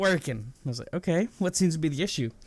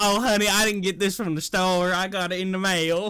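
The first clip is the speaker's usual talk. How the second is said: put-on drawling Southern accent of an elderly woman. Retelling a call with a woman, the speaker quotes what she said: old Southern lady accent. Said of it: "Your old Southern lady accent is god tier".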